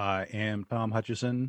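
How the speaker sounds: hushed, soft, robot-like delivery. Co-host introduces himself at the top of the show, in a robotic voice. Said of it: "that was very robotic".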